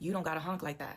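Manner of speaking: mock nasty, unpleasant attitude. Retelling what was said to a honking driver: imitating a nasty attitude. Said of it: "with a nasty attitude".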